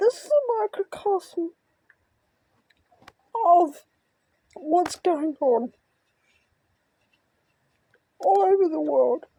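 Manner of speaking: talking through tears. Talking about a video and their father's brain injury, crying while talking. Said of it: "I'm sorry for crying".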